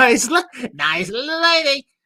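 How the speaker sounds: put-on comic nasal voice. Doing a Jerry Lewis impression, not particularly good: Jerry Lewis voice. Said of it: "that's my Jerry Lewis".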